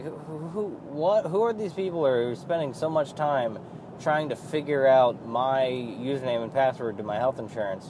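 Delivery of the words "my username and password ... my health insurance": normal talking voice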